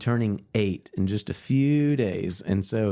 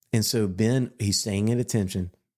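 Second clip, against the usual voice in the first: plain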